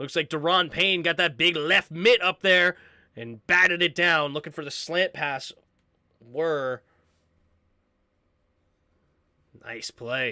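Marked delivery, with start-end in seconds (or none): 6.2-10.3 very low, quiet, sardonic sarcasm. Commentating a football play, sarcastic. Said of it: "I'm being sarcastic".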